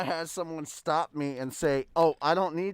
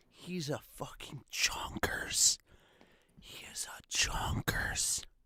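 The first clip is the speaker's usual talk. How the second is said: slow, drawn-out whisper, very close to the mic; 2 semitones lower, 7 dB quieter than usual. Showing the others a chubby dog: whispering into the mic. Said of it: "I leaned into the mic to whisper the word chonkers".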